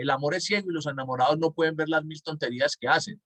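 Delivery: ordinary talk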